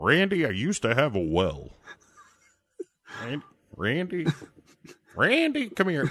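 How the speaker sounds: high character voice, calling out with big pitch swoops. Saying the name Randy over and over for fun: Ted Levine voice. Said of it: "say Randy like Ted Levine".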